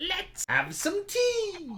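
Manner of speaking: dry rustling leaf voice. Voicing a little old woman inviting guests to sit: voice like crunching leaves. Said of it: "in a voice reminiscent of crunching leaves".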